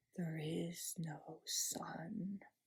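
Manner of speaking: hushed, soft, deep, deliberate, very slow delivery. Narrator reading the witch repeating her words to the four, softer and deeper. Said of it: "She repeated in a softer and deeper voice".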